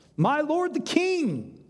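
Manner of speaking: calling out, high and drawn-out.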